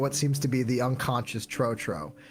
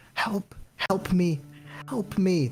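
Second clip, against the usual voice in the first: put-on very quiet, far-off, high little-girl pleading voice; 5 semitones higher than usual. Voicing a little girl begging someone to help her: very quiet faint begging. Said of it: "This very quiet, faint".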